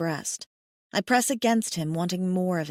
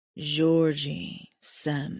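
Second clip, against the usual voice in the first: ragged, roughened voice, much lower; 4 semitones lower than usual. He answers Georgie, who is touching his chest, in a ragged voice. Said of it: "he says, voice ragged".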